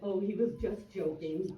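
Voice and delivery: ordinary talk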